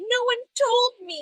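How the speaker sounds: put-on very high, loud, slow tearful crying. Retelling an emotional after-show interview, imitating Lala crying. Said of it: "being like".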